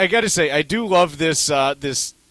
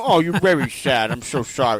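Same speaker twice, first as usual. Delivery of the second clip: put-on sorrowful, sympathetic little baby voice; 2 semitones lower than usual. Describing a voice someone used, imitating sad baby Elmer Fudd voice. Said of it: "It was kind of a sad voice".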